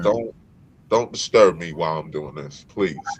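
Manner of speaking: calm, spiritual tone. Retelling what you once said to someone, retelling a calm, spiritual plea. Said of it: "very calmly and very spiritually saying".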